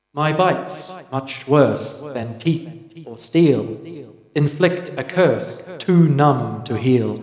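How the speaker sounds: strange, echoing, ringing voice. Voicing a door that speaks a riddle as the party approaches: odd echoey voice. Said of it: "an odd, echoey voice rings out".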